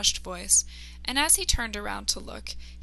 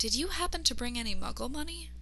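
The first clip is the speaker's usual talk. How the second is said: hushed stage half-whisper, close and quiet; 4 dB quieter than usual. He leans in close to Luna in a store, half-whispering. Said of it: "He heard the customer behind him finish getting rung up as he leaned in close to Luna and whispered".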